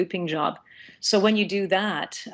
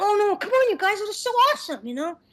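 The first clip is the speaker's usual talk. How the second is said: put-on very high, really young little boy voice. Showing the different levels of a boy voice, going really young: very young boy voice. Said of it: "if I want to go really young, and I can sort of talk like that".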